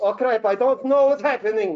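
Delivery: put-on high, loud Eastern European accent.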